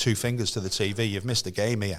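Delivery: normal talking voice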